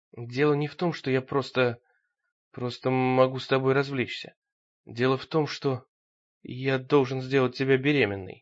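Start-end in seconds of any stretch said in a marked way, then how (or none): none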